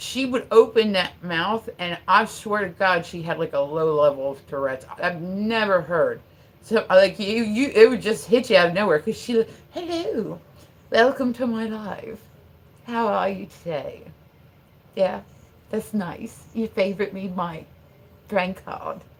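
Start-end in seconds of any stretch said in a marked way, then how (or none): 9.7-18.9 put-on prim London accent. Imitating a friend from London who sounded like Mary Poppins: imitating Kelly's Mary Poppins-like London voice. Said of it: "and that's how she would say it".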